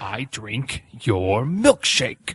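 slow, deliberate, leaning into each word. Answering a request to do the milkshake scene: impression of the milkshake scene. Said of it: "Do your impression".

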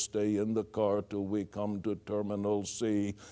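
flat, low, robotic monotone announcer voice. Airport train computer voice announcing a terminal stop: flat computer announcement voice. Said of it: "something like the computer voice".

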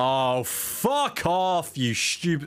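strong British accent. Streamer, mid-stream, snapping at something, very British. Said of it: "that was like the most British fuck off I've ever said".

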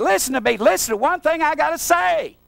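very high, really loud yelling. Retelling what he yelled at a man who wanted his Christmas: retelling his own loud yell. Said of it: "I yelled at him real loud".

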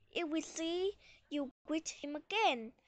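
ordinary delivery

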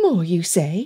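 gently ribbing, playful teasing. Elizabeth answers the boy's grunted demand, teasing. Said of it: "Elizabeth teased".

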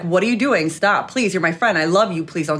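ordinary talk

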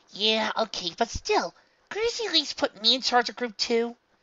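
complaining tone. Narrator reading a character's line in a story; complaining. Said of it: "Madeline complained".

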